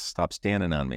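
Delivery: normal talking voice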